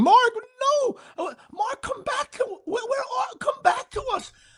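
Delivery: very high, eerie, haunting plea. Retelling a woman's voice calling out to a man in danger, imitating a haunting plea. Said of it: "like haunting".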